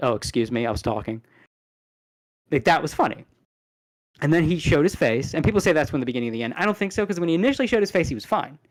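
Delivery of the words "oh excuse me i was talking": mock annoyed politeness, lower pitch. Retelling a gamer's reaction to a jump scare, imitating someone inconvenienced. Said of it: "like the jump scare inconvenienced his, him talking".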